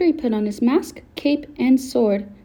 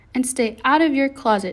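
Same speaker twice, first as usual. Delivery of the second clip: plain reading voice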